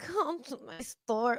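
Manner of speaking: put-on lustful voice. Pausing a car ad to mock the man in it, mock-horny voice. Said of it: "sounds really horny".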